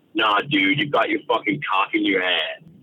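put-on American accent. Retelling what Mason Cox said at a urinal: American accent imitating Mason Cox. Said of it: "he said in his American accent".

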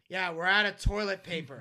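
mock sarcastic tone. Retelling replying to Conrad heading to the bathroom: retelling a sarcastic remark. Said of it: "I turn to him sarcastically and I go".

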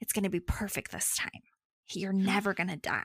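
breathed-out half-whisper without voice. Retelling a story: she holds the baby in the flame, half-whispering. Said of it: "and she whispers".

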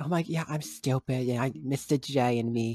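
grating clown lady voice, high and drawn out slowly. Speaker complaining about the clown lady character, mocking Margot Robbie's clown voice. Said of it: "She's talking with that fucking voice".

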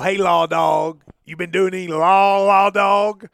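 loud, drawn-out, friendly, one-note, deliberate call. Retelling how a coach greeted him: Billy Gillispie impression. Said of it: "Is that your Billy Gillispie impersonation?".

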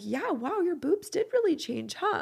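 very high-pitched, syrupy, sweet voice. Retelling what David said coming up behind at the mirror, imitating David's sweetest voice. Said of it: "Like in the sweetest voice".

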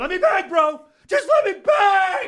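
very loud, very high, drawn-out hollering. Repeating a fighter's catchphrase with high energy: yelling. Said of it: "I'm yelling a lot today".

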